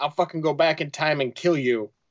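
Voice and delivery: muttered under the breath. Retelling what someone said during a fight: imitating a mutter under breath. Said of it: "under his breath".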